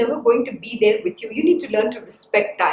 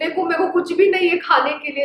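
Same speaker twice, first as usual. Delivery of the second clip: put-on sweet, pleading little-child voice; 5 semitones higher than usual. Imitating the teacher asking for a sweet at breakfast: imitating Krishna Guruji as sweet child. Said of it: "like a sweet child, my Guruji will say".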